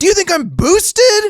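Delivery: screeched at full volume, very high, voice cracking. Replaying his own in-game emote line on request, retelling a yell with voice crack. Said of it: "line of me yelling like".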